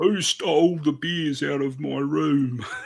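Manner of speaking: put-on slow troll voice with Australian accent. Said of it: "sounded like a cross between a troll and an Australian".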